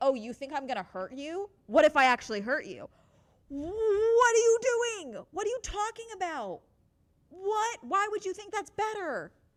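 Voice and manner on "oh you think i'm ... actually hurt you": menacing, threatening, bullying, intimidating man voice. Imitating men who answer fear with threats: imitating an intimidating man. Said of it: "you have men where it's like".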